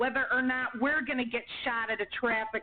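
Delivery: plain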